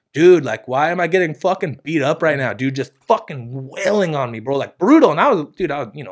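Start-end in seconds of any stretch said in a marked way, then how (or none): 0.1-2.5 words sobbed out through tears, crying. Retelling being beaten as a young kid: imitating own past crying. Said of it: "I'm kinda, like, crying".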